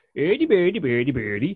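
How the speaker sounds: put-on Swedish accent with gibberish. Showing what Swedish sounds like, in a mock Swedish accent. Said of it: "Swedish sounds like".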